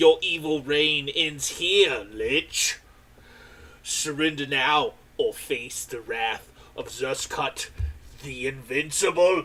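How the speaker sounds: booming, very loud, grand heroic voice. Voicing a hero confronting the lich in a staged showdown: heroic challenge. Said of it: "And then he'll go".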